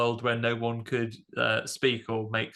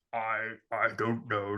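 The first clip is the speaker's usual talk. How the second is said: put-on very deep voice; 4 dB quieter than usual. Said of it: "His natural speaking voice is really that deep".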